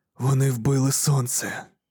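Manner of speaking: plain reading voice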